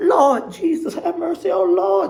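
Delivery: very high, slow, drawn-out churchy pleading tone. Retelling how Miss Nancy stepped between two men: imitating Miss Nancy's churchy pleading. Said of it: "she started with her churchy stuff".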